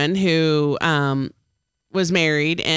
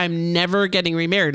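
ordinary talk, nothing marked

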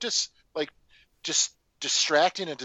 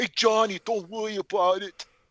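pitched-up, slurred tough-guy mumble out the side, clumsily done; 5 semitones higher than usual. Showing others how he talks the whole time, you do a Brad Renfro impression, Sylvester Stallone mouth. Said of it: "he talks like this the whole".

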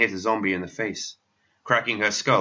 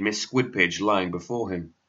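ordinary delivery

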